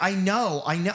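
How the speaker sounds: put-on furious yelling, angry screaming. Recounting a scene where a character driving a car screams, imitating her screaming. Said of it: "she's screaming like".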